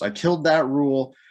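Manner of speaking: normal talking voice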